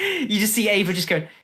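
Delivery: ordinary delivery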